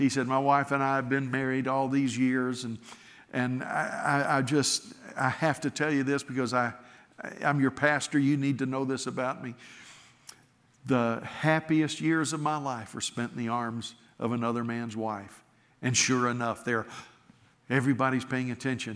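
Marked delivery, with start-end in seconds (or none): none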